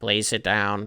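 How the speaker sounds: synthetic, robotic computer AI voice. Describing a voice heard from behind you, in a robot ai voice. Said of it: "like a robot A I voice".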